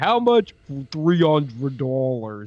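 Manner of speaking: terrifying, deep, low and slow creepy voice.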